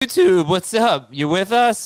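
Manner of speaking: worn-out voice, breaking and cracking midway. Greeting YouTube viewers at the start of a late-night show, voice cracking. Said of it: "My voice just cracked".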